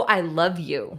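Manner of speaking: normal talking voice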